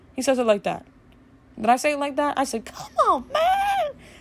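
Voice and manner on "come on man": really high voice, pitched way up. Retelling how you yourself said the line, unlike him: really high-pitched. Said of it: "I said it really like high pitched".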